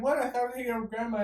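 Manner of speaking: dejected, crestfallen, sad, high and quick. Retelling a guy sent downstairs by grandma, imitating him all sad. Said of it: "He's all sad ass".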